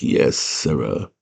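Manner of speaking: soft, breathy, airy whispered murmur. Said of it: "He talks like this".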